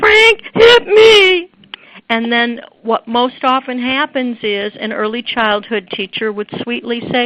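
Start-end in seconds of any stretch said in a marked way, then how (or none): 0.0-1.5 put-on acted, tearful child's wail, very high and loud. Imitating a child who comes up complaining about being hit: imitating a crying child. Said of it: "comes up to you crying and saying".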